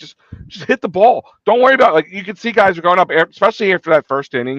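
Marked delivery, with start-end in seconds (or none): 0.0-1.9 mock, high, pleading screaming. Retelling how he screamed at the players yesterday: retelling a scream. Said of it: "I'm like screaming".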